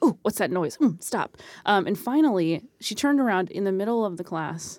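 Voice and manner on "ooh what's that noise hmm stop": put-on passive-aggressive voice. Retelling a classmate turning around over chip noise: imitating passive-aggressive complaint. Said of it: "passive aggressive".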